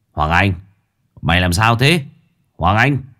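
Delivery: plain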